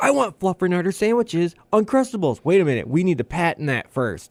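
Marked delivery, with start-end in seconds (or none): 0.0-2.4 high-pitched shouting yell. Retelling searching the store with his wife: imitating own yelling. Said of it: ""Why are you yelling?"".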